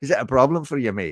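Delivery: fast, fake Irish accent leaning Scottish. Speaking as a Dungeons and Dragons character to a friend who mocked the accent: put-on Irish accent. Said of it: "when I talk in the Irish".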